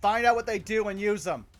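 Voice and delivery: very loud, high-pitched shouted yell. Player voicing their character's order to the group, yelling. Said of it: "He's just gonna yell".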